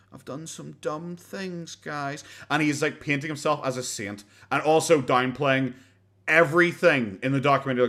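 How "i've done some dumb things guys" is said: put-on pathetic voice, much quieter and slower. Mimic Boogie trying to portray himself as beaten down, in Boogie's wee pathetic voice. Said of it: "he's doing the wee pathetic voice".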